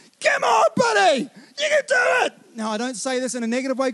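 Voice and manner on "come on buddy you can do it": very high-pitched, shouted sideline-style cheering. Retelling parents on the sideline losing it: imitating parents yelling from sideline. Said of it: "two parents on the sideline that are losing it".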